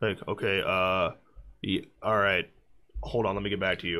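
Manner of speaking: very deep, soft, flat, bored, uncaring monotone drone. Retelling how a guy put them on hold, imitating his monotone uncaring voice. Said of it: "in the most monotone voice, like I don't give a shit voice".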